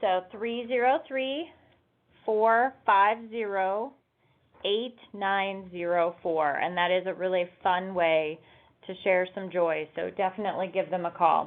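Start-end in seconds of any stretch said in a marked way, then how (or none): 0.0-6.6 unhurried, deliberate, carefully spaced digits, slower. Repeating the city's phone number for listeners, saying it slower. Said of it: "I'm going to say it a little slower".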